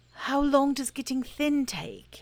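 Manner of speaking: worried, fretful voice. Pooh asks Christopher Robin a question: anxious. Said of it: "asked Pooh anxiously".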